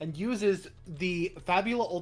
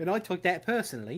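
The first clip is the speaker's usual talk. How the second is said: put-on English accent across the whole line. Imitating another speaker taking offense at a nickname: put-on English accent. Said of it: "What the fuck kind of accent was that?".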